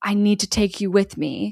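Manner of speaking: put-on possessed, demon-like voice. Retelling a scene where Peter turns to James, demonic voice. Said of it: "a demonic voice".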